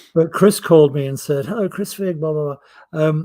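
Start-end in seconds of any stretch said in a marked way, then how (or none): 1.5-3.1 put-on posh English voice. Retelling a phone call from a producer: posh voice of Chris Figg. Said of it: "he's a very posh fellow".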